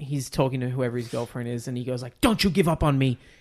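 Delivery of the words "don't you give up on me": raised, utterly intense, dramatic delivery. Quoting a Rob Lowe film line to a girlfriend: intensely imitating Rob Lowe.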